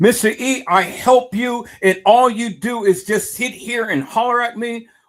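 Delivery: very high-pitched, irate, angry tone. Retelling a woman's complaint to him, the speaker imitates an irate woman. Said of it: "she got a little irate and stuff".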